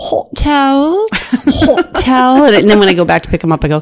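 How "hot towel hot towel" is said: fake English accent, very high and very slow. Speaker describing handing out hot towels on flights, in a fake English accent. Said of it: "I do a fake English accent".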